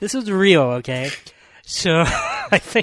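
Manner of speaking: stifled giggle, holding back laughter. Starting a serious movie point while the others tease, trying not to laugh. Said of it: "You can't even say it without laughing".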